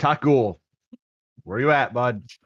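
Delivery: calling out loud across a distance. Enigma calls out for Taco, trying to find him: calling out. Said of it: "Enigma's just going to call out".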